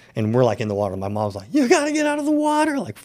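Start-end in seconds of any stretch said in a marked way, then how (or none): 1.5-2.8 very high-pitched, frantic, freaking-out panic. Retelling a mom calling them out of the water: imitating someone freaking out. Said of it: "freaking out".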